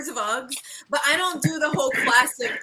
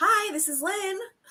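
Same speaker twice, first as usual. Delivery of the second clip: polite, pitched-up telephone voice; 5 semitones higher, 3 dB quieter than usual. Showing how they answer the phone, the speaker uses their telephone voice. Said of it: "my telephone voice".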